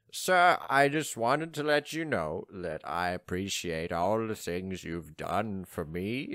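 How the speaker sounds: whiny, sniveling man voice. Playing a servant addressing his master as sir, in a sniveling man voice. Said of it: "bit of a sniveling man".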